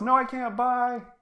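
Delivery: very high, slow, drawn-out shout. Voicing a departing character who answers the party while leaving: shouting. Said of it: "He shouts".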